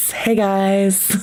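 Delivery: put-on snake character voice.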